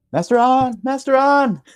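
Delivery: loud yelling, calling out. Fleeing a possessed building in character, calling to master an: yelling for someone. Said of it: "I'm yelling for Master An".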